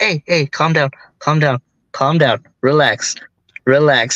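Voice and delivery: play-acted gentle, soothing, fatherly reassuring tone. Retelling a partner calming them in a match: imitating a soothing voice. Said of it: "he went such into father mode ... so soothing".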